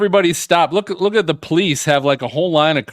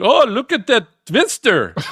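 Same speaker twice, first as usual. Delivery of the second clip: put-on accent from the Netherlands; 6 semitones higher than usual. Retelling what people in a twister video say, in a Frozen accent. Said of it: "I think that's a Frozen accent".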